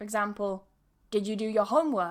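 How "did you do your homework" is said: pitch falls at the end on homework. Showing how a question to students can sound: falling pitch on homework. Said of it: "I'll use a falling intonation".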